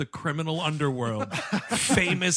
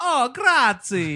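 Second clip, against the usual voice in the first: raised, high, put-on Italian accent of an older woman; 8 semitones higher, 6 dB louder than usual. Retelling a movie scene's coffee-pouring woman, imitating an Italian accent. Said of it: "the accent".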